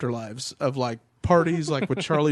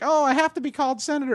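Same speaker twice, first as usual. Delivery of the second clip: very high, derisive, taunting caricature voice; 12 semitones higher than usual. Retelling how bloggers mocked a senator, a mocking Elizabeth Warren impression. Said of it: "they were mocking Elizabeth Warren".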